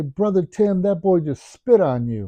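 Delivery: put-on small, high little kid voice. Retelling a child at church speaking up: imitating a little voice. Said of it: "I hear this little voice say".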